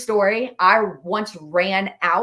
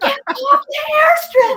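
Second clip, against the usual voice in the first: mock, very high, loud shout; 6 dB louder than usual. Retelling warning a man who pulled onto the airstrip, retelling a yell. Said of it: "and I'm like yelling".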